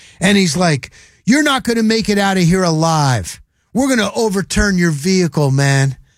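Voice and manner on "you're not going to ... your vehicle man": mock, heated, riled hothead screaming. Retelling a stranger who threatened the group, the speaker imitates someone screaming. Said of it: "he's screaming at us".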